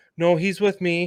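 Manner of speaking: quiet, small, soft voice, said off to the side. Retelling a confrontation, quoting someone's interjection from the side in a quiet little voice. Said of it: "in a quiet little voice".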